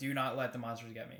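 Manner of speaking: put-on stern child voice. Retelling a movie scene, quoting the boy Billy: imitating Billy sternly. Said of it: "very, like, stern".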